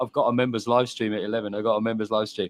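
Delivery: plain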